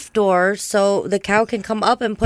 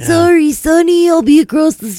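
put-on old creature voice, higher and louder; 7 semitones higher, 6 dB louder than usual. Speaker imagining how a turtle would talk, old turtle voice. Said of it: "old oh. voice and be like".

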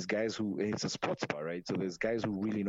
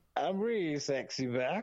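put-on sloppy, slow, high drunken slurring; 7 semitones higher than usual. Describing what to do when drunk in a bar: mock drunk slurring. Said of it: "you just get drunk in a bar".

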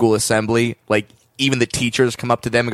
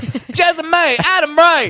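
Southern motherly call, much higher, slower; 4 dB louder than usual. Saying two people's names like a southern mom calling them to dinner. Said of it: "sounds like a southern mom is calling you to dinner".

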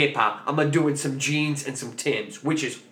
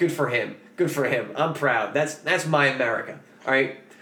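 usual speaking voice

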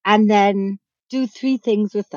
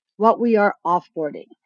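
normal talking voice

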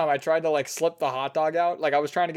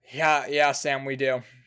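put-on sighing delivery, much slower. Retelling the guy's answer to his question about his order: imitating a sighing reply. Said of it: "the guy sighing and going".

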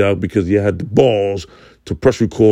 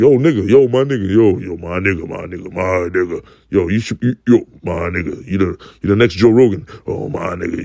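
admiring, effusive, praising fan voice.

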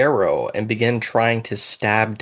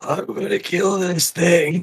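struggling, high, incredibly raspy wheezing voice; 8 semitones higher than usual. Voicing a struggling character, raspy wheezing voice. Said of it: "his voice is incredibly raspy ... he struggles and wheezes out".

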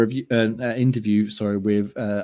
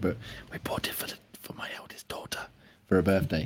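barely audible, very quiet hushed whisper; 4 semitones lower, 9 dB quieter than usual. Telling another speaker about a daughter's birthday present: whispering. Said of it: "I'll have to whisper it".

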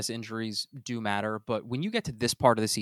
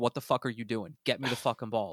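put-on exasperated voice; 3 dB quieter than usual. Retelling what the receiver seemed to say to the quarterback: imitating Stefon Diggs. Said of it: "standing right in front of him with his arms up like this".

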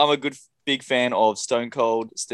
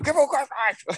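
very high, screaming ringside commentator call; 14 semitones higher than usual. Remembering JR calling the wrestling move: imitating JR screaming. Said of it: "I just remember J R screaming".

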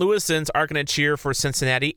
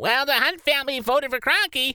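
very high, squeaky, whiny mock voice. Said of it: "that guy with that squeaky voice".

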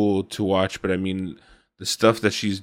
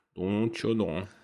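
put-on Minnesota accent, much quieter; 7 dB quieter than usual. Recommending a movie to the others, quoting it in a Minnesota accent. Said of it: "With that Minnesota accent".

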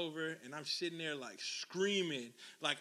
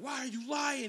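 agitated, high, freaked-out outburst; 8 semitones higher, 4 dB louder than usual. Retelling someone's question while being hit: imitating someone freaking out. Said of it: "He started freaking out".

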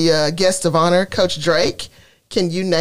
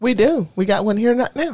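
strong, very country-sounding accent; 4 semitones higher than usual. A coach mentioning the Coach of the Month, sounding super country. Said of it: "I just sounded super country when I said that".

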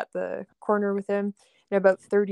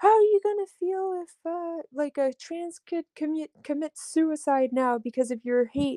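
play-acted, high, furious angry shouting; 9 semitones higher than usual. Retelling what a crowd shouted at them, imitating someone yelling. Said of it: "they were yelling at us".

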